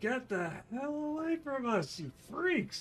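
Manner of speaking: very high-pitched shout. Describing a character fending off attackers with a bat: yelling at attackers. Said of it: "just yelling, basically".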